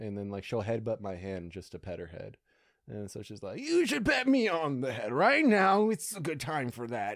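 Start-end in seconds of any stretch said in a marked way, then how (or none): 3.6-7.2 put-on very high, swooping old lady voice. Speaking for the old bulldog who headbutts a hand, old lady voice. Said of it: "is that the old lady voice that you do".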